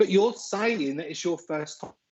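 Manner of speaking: ordinary talk, nothing marked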